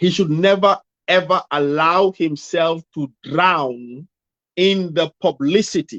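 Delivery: very slow, deliberate, measured, word by word. Self-described fast talker makes a point very slowly so it is well digested. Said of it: "I should say this very slowly so that it is well digested".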